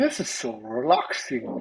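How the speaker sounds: very low, put-on relaxed tone. Voicing a lesser demon held against someone's chest: put-on relaxed voice. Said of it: "He's like".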